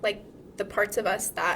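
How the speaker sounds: usual speaking voice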